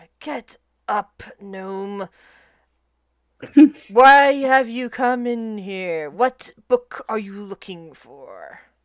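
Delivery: speaking through a light, amused chuckle. Game master voices the beholder speaking to a gnome lying on the ground, very quiet, soft chuckle. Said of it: "lets out a soft chuckle, but very quietly, and says".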